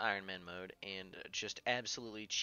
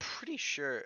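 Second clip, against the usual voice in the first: voice cracking upward mid-phrase; 5 semitones higher than usual. Mid-sentence, the speaker's voice cracks. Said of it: "That was that was a voice crack".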